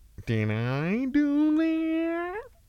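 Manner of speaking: very high, slow, swooping, drawn-out voice. Trying out a Halloween costume idea: Urkel voice. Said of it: "he was like".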